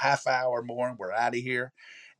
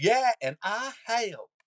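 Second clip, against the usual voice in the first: put-on extreme, very high, slow corn pone Southern accent; 10 semitones higher, 3 dB louder than usual. Retelling a commercial where a little girl speaks: corn pone Southern accent. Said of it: "most corn pone Southern accent ever".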